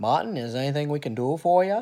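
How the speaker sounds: put-on loud, high Boston accent. Act out Senator Kennedy phoning Doctor King in jail, in your best Kennedy accent. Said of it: "I'm going to do my best Kennedy accent".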